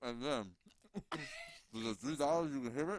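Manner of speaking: words mushed, talking through a mouthful while chewing. Talking into the mic after taking a bite, talking with food in mouth. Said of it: "Take a bite and then talk with food in your mouth".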